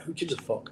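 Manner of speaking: acted-out furious, exasperated snapped outburst. Retelling snapping back at a police sergeant: retelling own angry snap. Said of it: "I just snapped and I went".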